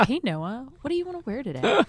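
sing-song smart home assistant voice. Imagining a brand speaking to a customer, in an Alexa voice. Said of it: "speaking in an Alexa voice".

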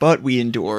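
ordinary talk

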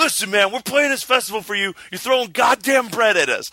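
shrill, very high, furious angry screaming. Retelling a band member screaming at a crowd throwing bread: imitating someone screaming angrily. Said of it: "starts screaming at the crowd where he's like".

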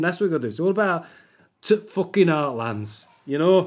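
put-on Yorkshire accent with exaggerated Yorkshire vowels. Telling a story about election-night coverage, saying it in a Yorkshire accent. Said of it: "that's a Yorkshire accent".

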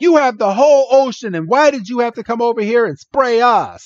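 mock, high-pitched, all but screaming. Speaker retelling a scene after the heroes get splashed, imitating Misty screaming. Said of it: "she's basically screaming".

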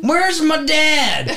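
put-on very high, small boy's voice with Tennessee accent. Retelling a small kid in a bar speaking to the bartender, in a little Tennessee boy accent. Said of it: "he sounds like a little Tennessee boy".

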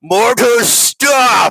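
huge, booming, big, loud, very high voice. A tabletop player voices his character casting a spell, in a big booming voice. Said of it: "he uses like this big banging voice".

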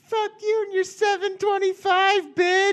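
put-on very high, shrill, squeaky little-kid voice. Recounting a little kid taunting him at the end of a game, imitating a little kid's voice. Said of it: "this little kid's voice who's like".

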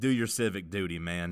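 contemptuous, dismissive, slow disdainful drawl. Quoting a coach's remark with the disdain heard in his voice: imitating Jeremy Pruitt's disdain. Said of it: "the disdain in his voice when he said".

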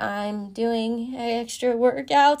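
acted, trembling, very slow, very drawn-out shaky voice. Retelling own reply to the head coach: imitating own shaking voice. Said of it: "voice shaking".

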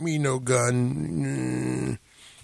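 flat robot voice, "gun" drawn out. Trying out movie-character voices: Iron Giant voice. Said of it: "I'm down doing Iron Giant".

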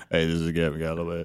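put-on, unnaturally deep voice. Acting out coming back and introducing themselves in a put-on deep voice. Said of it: "I mean, I'd be all deep".

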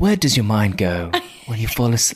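bad put-on accent drifting into Australian. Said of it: "Is that an Australian accent? I'm so bad".

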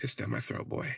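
breathy whisper, close in. Retelling what another person whispered to them: imitating someone whispering. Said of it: "he started whispering".

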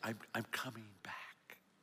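whispering. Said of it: "he'd whisper in my ear".

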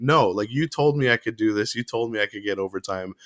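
normal talking voice

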